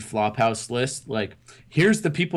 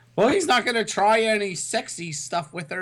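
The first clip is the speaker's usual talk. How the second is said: grandma voice with pitch way up; 10 semitones higher than usual. Retelling a phone call from the grandma, imitating the grandma's voice. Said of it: "that impersonation".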